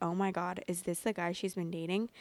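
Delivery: ordinary delivery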